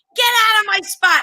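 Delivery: play-acted shrill, fed-up shout, very high. Recalling yelling from a window at someone in their parking spot, retelling a yell. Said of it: "and I'm yelling".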